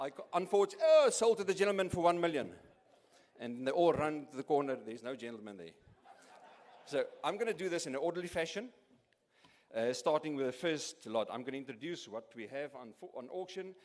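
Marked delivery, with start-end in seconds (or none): 1.1-2.5 auctioneer voice, higher and louder. Running a mock auction and closing a sale: auctioneer voice. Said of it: "to talk like the auctioneer".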